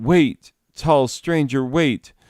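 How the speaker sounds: put-on high, pleading call, calling out. Retelling the mother running after the stranger: imitating someone crying out. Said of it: "My mother ran after him and cried".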